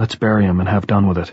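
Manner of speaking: ordinary delivery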